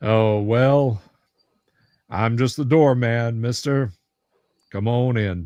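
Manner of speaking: very deep, mellow character voice. Voicing a lanky doorman greeting the players: very deep, mellow voice. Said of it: "his voice is very deep and mellow".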